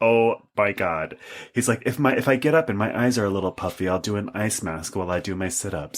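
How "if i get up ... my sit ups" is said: public-radio announcer style narration. Retelling a man's TikTok about his morning routine, in an NPR voice. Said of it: "in this NPR voice".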